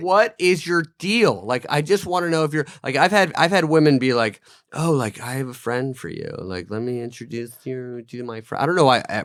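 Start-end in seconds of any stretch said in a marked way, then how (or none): 4.8-8.6 put-on woman voice, quieter.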